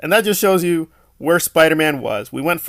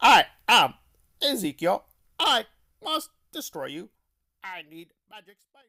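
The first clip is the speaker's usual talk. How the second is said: soft, halting broken-robot voice, stopping every phrase; 3 semitones higher, 7 dB quieter than usual. Mocking a character's speech in a film: Ezekiel as broken robot. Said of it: "he sounds like a broken robot".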